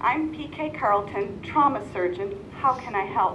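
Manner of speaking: normal talking voice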